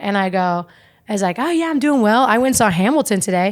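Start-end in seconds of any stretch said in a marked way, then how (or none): 1.4-3.5 chatty, warm host banter voice. Retelling warming up the improv crowd: imitating own crowd warm-up voice. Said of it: "you kinda warm up the crowd".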